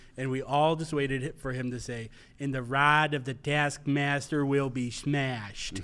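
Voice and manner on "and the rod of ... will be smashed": put-on heavy Chicago accent, laid on thick. Recalling the parish's midnight Mass reader, the speaker quotes his line in a thick Chicago accent. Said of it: "thick Chicago accent".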